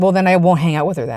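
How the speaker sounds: ordinary talk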